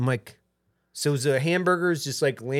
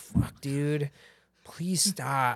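put-on begging, pleading tone, quieter; 6 dB quieter than usual. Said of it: "She's begging you".

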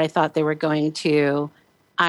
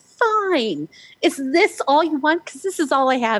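piercing high-pitched shout; 10 semitones higher than usual. Retelling a sleepless night at three in the morning: imitating own past yelling. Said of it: "yelling at him".

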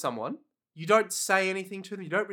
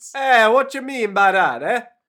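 booming, loud put-on Italian accent; 4 semitones higher, 12 dB louder than usual. Answering a joke about their great italian accents: mock italian accent.

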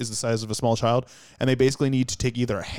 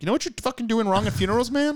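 put-on impression voice, delivered as a rant; 12 semitones higher than usual. Imagining the other speaker's funeral videos, doing a Gary Vee impression. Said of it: "Gary Vee".

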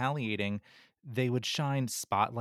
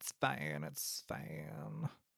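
hushed, breathy, put-on Valley Girl voice; 5 semitones higher, 10 dB quieter than usual. Agreeing with the other speaker, in a weird Valley Girl voice. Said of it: "that weird Valley Girl voice".

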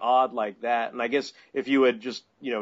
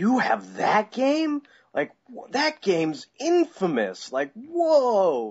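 high, swooping excited disbelief, "whoa" stretched; 9 semitones higher than usual. Retelling a chat about video games, quoting a man's reaction to Superman 64: retelling someone's excitement. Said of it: "he gets all excited about it".

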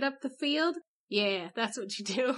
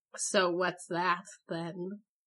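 wary, doubting, suspicious questioning tone; 6 semitones lower than usual. Asking what the Pope did next, in a suspicious tone. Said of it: "You sound so s-, suspicious".

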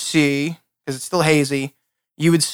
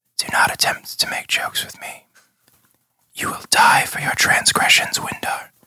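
faint, very soft whisper. Narrator voicing a voice heard inside a player's head, very soft whisper. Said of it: "a very soft whisper that says".

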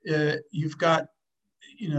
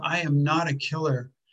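put-on angry, explosive outburst. Retelling how a man finally exploded at his trainer: imitating an explosive outburst. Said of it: "Ken Wines exploded".

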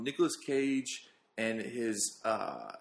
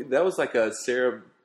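normal talking voice

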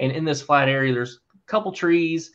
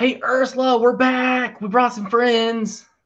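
very high, loud yelled call-out; 10 semitones higher, 4 dB louder than usual. Voicing a character arriving back at camp: yelling out in character. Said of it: "he just kinda yells out".

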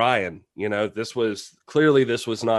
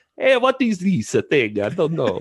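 put-on Italian accent, sing-song; 7 semitones higher, 4 dB louder than usual. Trying the accent again after being teased: put-on Italian accent. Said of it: "That's Italian".

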